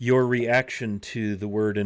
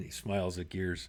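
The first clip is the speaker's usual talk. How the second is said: normal talking voice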